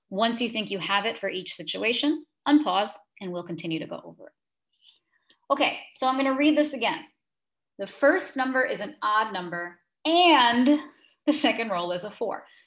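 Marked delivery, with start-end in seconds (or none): 7.8-12.4 and strongly stressed. Rereading a problem about rolls aloud: stress on the word and. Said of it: "why do I keep stressing this word and?".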